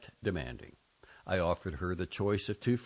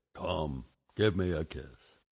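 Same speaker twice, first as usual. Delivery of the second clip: low, slow, drawn-out voice; 4 semitones lower than usual. The narrator squats down to his niece, speaking in his uncle's voice. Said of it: "said in my uncle's voice".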